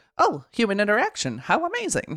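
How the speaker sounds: high, swooping, animated, with swinging pitch. Doing an impression of a character while discussing her. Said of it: "Pretty good impression".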